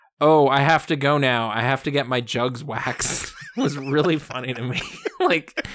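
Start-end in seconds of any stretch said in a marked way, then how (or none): 0.2-3.3 flat deadpan line reading. Quoting how Jenna Fischer plays a line, Jenna Fischer's deadpan delivery. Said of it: "And she just deadpans this line".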